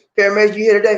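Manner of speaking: loud, high call-out.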